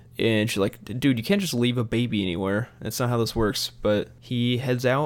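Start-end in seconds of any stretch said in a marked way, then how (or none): none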